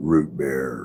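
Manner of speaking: low, low-pitched voice. Asked to say a phrase in a low voice, the speaker does it: low voice. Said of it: "Root bear in a low voice".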